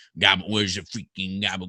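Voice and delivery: put-on Italian American mobster accent. Describing how people picture Italian Americans, stereotypical Italian American accent. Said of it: "think of like Tony Soprano".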